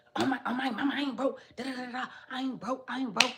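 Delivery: acted out, worked-up, furious, high-pitched rant. Retelling how he reacted to being called broke: imitating an angry man. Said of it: "'cause he got so mad".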